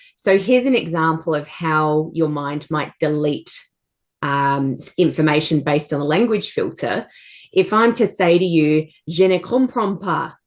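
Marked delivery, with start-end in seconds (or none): 9.1-10.3 deliberately terrible put-on French accent. Giving listeners a language example, speaking in a terrible French accent. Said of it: "in my terrible French accent".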